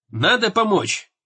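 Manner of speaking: plain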